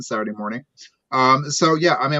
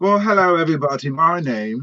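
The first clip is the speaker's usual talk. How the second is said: sudden, put-on British accent; 3 semitones higher than usual. Greeting everybody and starting a self-introduction: sudden british accent. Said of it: "I don't know why I'm British all of a sudden".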